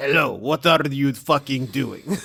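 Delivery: put-on dwarf character voice. Voicing a dwarf who comes over to a player: in-character dwarf voice. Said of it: "I'll just do the in-character voice".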